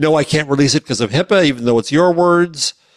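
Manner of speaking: ordinary talk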